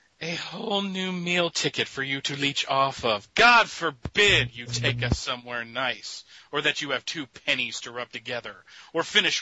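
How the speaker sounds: angry, fed-up, nagging grandma voice. Asked to read a line like Aunt May, pissed grandma voice. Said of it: "can you read that like Aunt May for me".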